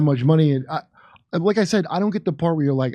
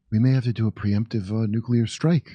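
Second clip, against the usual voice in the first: soft, gentle, soft-spoken delivery; 6 semitones lower, 4 dB quieter than usual. Demonstrating that saying something in a soft voice makes it sound smart; soft voice. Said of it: "if you say that in a soft voice".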